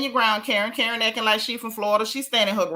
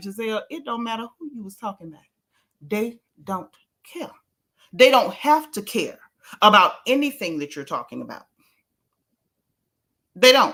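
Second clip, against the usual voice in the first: ordinary talk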